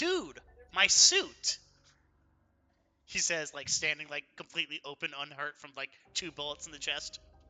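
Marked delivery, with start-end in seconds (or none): 0.0-1.6 loud, high, booming, swinging in-character yell. A tabletop player voices his character just shot twice in the chest, shouting. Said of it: "he shouts".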